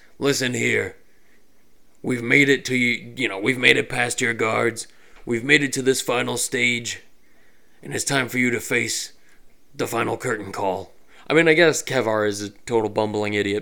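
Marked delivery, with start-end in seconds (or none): 0.2-10.9 rough, gruff yelled voice. Kevar shouts out to the evil villain after getting past the guards, in Kevar's gruff yell. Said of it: "he yells out in his gruff voice".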